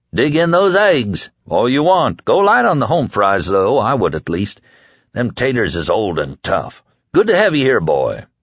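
plain reading voice

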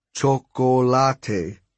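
put-on chocolate pronounced with Spanish accent. Reading a story aloud, a character's word in a spanish accent. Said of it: "But he said it with a Spanish accent".

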